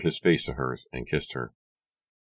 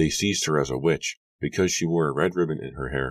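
plain

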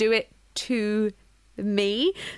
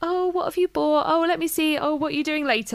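high, put-on, overly nice, fake-sweet voice; 5 semitones higher than usual. Retelling how a nosy person came into their room: imitating someone being fake-nice. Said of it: "trying to be all nice".

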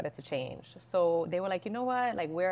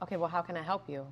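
mock rude tone in a woman's voice. Speaker retells how a woman answered her question about the office, mimicking a rude woman. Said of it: "But really rude, a little rude about it".

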